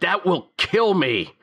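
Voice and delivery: very high, loud, abrupt exclamation. Narrating a scene, voicing a magician reacting to the fortune teller's whisper, loud reaction. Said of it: "the magician's like reacts loudly".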